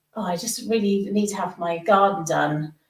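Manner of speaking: normal talking voice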